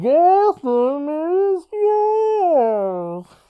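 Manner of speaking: garbled, distorted masked-villain voice. Friends joking about movie villain voices, repeating the line when asked: muffled, unintelligible Bane voice. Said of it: "Sorry. Say that again".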